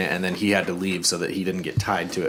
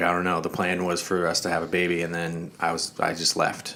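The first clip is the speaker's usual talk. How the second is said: ordinary talk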